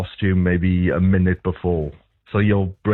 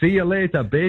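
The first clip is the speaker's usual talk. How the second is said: very high, shrill yell at top of voice; 10 semitones higher than usual. Retelling what she shouted as she left someone at the dog park, retelling a shout. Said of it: "at the top of her voice, she shouted out".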